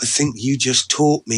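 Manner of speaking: ordinary talk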